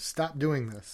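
imitated screaming voice. Retelling what one person screamed at another: imitating someone screaming. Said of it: "He's screaming at him".

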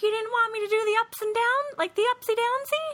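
squeaky, very high, silly, weird put-on voice. Retelling a scene from a show, imitating a character's weird voice. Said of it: "she always does these weird voices".

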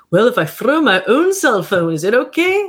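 bad put-on Scottish accent. Voicing a listener's imagined thoughts, in an awful scottish accent. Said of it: "That was awful Scottish accent".

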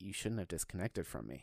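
put-on threatening, menacing, accusing delivery. Retelling what a threatening caller said: imitating a menacing caller. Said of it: "the only word I can put towards his voice was menacing".

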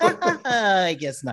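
goofy, silly laugh.

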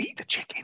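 hushed, soft, breathy whisper. Retelling how film actors spoke their dubbed lines: whispering. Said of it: "them whispering".

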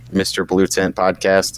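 plain

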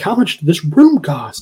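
demanding yell, held back, mild. Retelling an argument about money, imitating someone screaming. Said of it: "He's just screaming at him".

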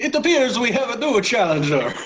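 high, hammy, put-on Italian accent. Voicing the head of the Venice Invitational: Italian accent. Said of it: "now I've got to do an Italian accent".

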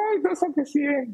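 acted-out crying, very high, tearful voice. Retelling how someone cries after scoring a hundred: imitating someone crying. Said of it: "se pone a llorar y dice".

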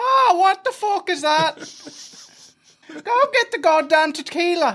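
imitated Spanish accent. Retelling own words to Ma, in a put-on Spanish accent. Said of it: "'cause it's a Spanish accent".

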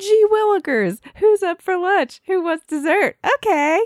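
put-on very high, loud, gushing, eager excited kid voice. Describing someone walking around cheerfully, in an excited kid voice. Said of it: "he's excited".

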